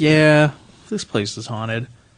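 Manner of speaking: casual, unbothered, nonchalant, offhand tone. Retelling the bartender's reply about the haunted place: imitating someone nonchalant. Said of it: "she's all nonchalant about it".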